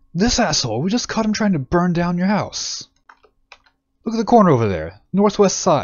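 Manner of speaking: very high angry accusing voice. In a game, a townsperson speaks to the mayor, Kier; angry, accusing townsperson. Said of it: "One of the townsfolk looks over at him. / One of the townsfolk looks over at him".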